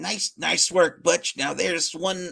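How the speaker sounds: halting, faltering attempt at a president voice. Reading a comic's crime-boss lines aloud: Joe Biden voice. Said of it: "I'm trying to do a Joe Biden voice".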